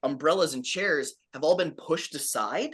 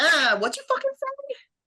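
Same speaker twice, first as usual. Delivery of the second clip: very high, loud, squeaky rabbit-creature voice; 5 dB louder than usual. Voicing a rabbit figure that looks at a player and speaks: rabbit figure confronting someone. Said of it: "it kinda looks at you and goes".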